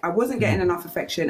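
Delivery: plain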